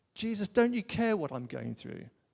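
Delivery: acted, put-on indignant tone. Speaker acting out how they sometimes come to Jesus, mock-indignant. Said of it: "I can want my tone to be indignant".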